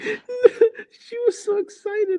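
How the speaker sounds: laughing, very high and slow.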